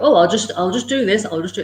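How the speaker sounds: ordinary talk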